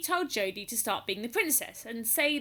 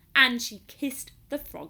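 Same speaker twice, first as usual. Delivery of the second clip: usual speaking voice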